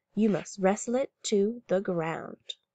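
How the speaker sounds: deeply solemn, grave, weighty delivery. Reading a story aloud, a character replies in a very solemn voice. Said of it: "in a very solemn voice".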